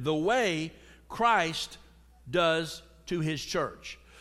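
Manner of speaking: "the way" stressed, slowed and weighted. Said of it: "that's key right there".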